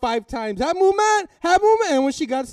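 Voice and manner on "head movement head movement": shrill, high, loud, repeated yell. Retelling a fight trainer's corner advice: imitating a trainer yelling. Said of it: "he's just yelling".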